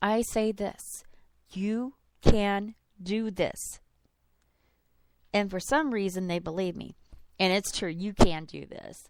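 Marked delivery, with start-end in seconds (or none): 1.5-3.8 drawn way out, very slow and deliberate. Showing how they reassure an overwhelmed person, looking at them: speaking very slowly. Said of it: "I speak very slowly".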